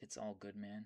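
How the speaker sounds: ordinary talk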